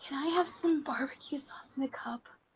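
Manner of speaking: soft whisper, not breathy.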